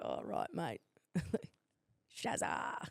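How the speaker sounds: whispered, hushed, breathy put-on Australian accent. Joking about how people talk in Australia, imitating an Australian accent. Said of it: "Australia's like".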